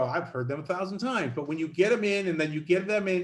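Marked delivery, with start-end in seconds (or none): none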